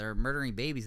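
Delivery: normal talking voice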